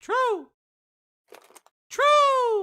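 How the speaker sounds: shrill, very high, loud bird-puppet voice. Speaker answers another speaker in a bird voice. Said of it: "I don't like your true bird voice".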